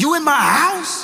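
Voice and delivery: very high-pitched, confrontational, ready-to-fight voice. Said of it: "Bass in voice, ready to beat somebody down".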